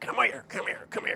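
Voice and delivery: play-acted, exasperated, frustrated, repeated yelling. Explaining how owners call a dog, acts out calling it, mock-frustrated yelling. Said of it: "you'll get into this frustration where you're like... You start yelling".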